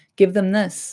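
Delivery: ordinary delivery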